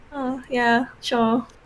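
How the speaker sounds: high, soft, sassy, dismissive voice. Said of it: "he does look a bit sassy".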